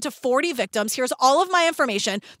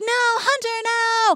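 high, mocking put-on girl voice; 7 semitones higher than usual. Telling a story, quoting Camille's voice for the girl: imitating Camille. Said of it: "I'm doing a voice for you, Camille".

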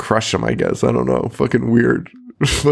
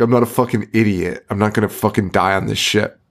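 put-on aggressive character voice. Retelling a film scene, quoting a character's reply: imitating Merchant, aggressive. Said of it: "He's so aggressive about that".

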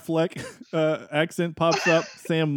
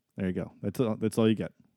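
ordinary talk, nothing marked

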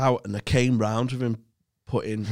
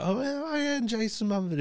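put-on teasing ribbing, pitched way up, joking; 11 semitones higher, 5 dB quieter than usual. Recounting being annoyed along with Wozniak, retelling a joking jab. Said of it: "jokingly like".

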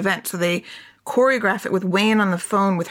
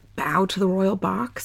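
hushed, lowered stage whisper; 3 dB quieter than usual. Retelling what he half-whispered to her during the show: imitating a half-whisper. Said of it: "whispers to her".

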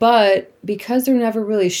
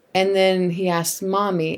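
plain

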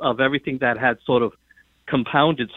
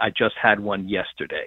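put-on flat deadpan, lower pitch; 4 semitones lower than usual. Retell George's quip to the American press, imitating a perfect deadpan. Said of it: "in his perfect deadpan way".

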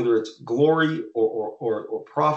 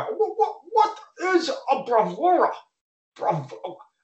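utterly perplexed, very high, slow, drawn out, put-on; 13 semitones higher than usual. Imitating Todd asking what a Bravura is, mock-perplexed. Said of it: "being said like Todd ... He was so perplexed".

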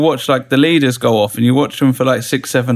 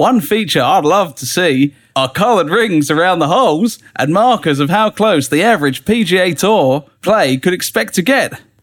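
patchy put-on Australian accent slipping in and out, pitched up; 5 semitones higher than usual. Reading out the listener's email: put-on australian accent, coming and going. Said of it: "I can't do it".

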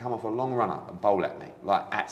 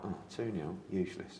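muttering, much quieter and slower; 3 semitones lower, 10 dB quieter than usual. Recounting a private reaction to a lost match: muttered under breath. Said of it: "under my breath".

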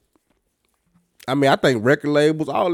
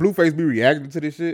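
ordinary delivery

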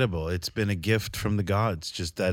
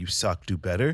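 plain

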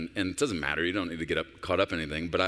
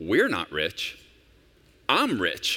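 put-on dry, matter-of-fact deadpan, raised voice; 4 dB louder than usual. Retelling a father's reply to his children at the dinner table, imitating someone deadpan. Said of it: "And Shaq just deadpan".

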